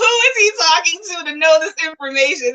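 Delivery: high, laughter-choked crying. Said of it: "I'm crying, laughing".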